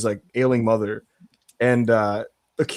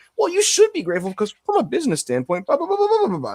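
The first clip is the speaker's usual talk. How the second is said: very high, sing-song, swooping voice; 12 semitones higher than usual. Mocking a commenter in wrestlers' replies: imitating a reply guy.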